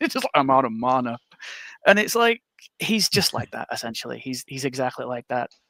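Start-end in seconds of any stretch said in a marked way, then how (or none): 0.3-1.2 heavy, big, deep put-on character voice. Retelling what a guy in a Warcraft game said, imitating a big deep voice. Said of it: "with this big deep voice".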